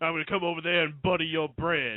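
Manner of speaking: over-enunciated character voice, every single word enunciated. Asking the others if they've heard how Mark Henry speaks: Mark Henry impression. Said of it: "Have you heard Mark Henry speak before?".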